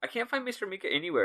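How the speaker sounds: high, fast, mock worried character voice.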